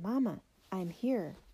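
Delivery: plain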